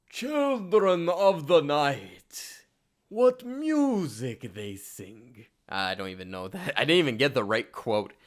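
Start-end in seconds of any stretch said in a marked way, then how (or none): 0.1-5.4 bad, very slow, drawn-out swooping voice. Trying a Dracula impression from the movie: terrible Bela Lugosi Dracula impression. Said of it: "I'm gonna try to do an impression right here".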